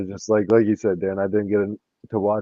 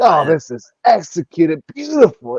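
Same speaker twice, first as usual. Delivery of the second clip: put-on excited commentator voice, higher and louder; 8 semitones higher, 7 dB louder than usual. Retelling how the commentator hyped the conference: imitating Bill Walton. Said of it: "and he always just like".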